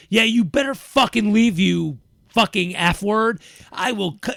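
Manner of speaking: mock screaming, loud and carrying far. Retelling a woman who screamed at the speaker down the street: imitating someone screaming. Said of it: "She is yelling this down so anybody outside down the street can hear this".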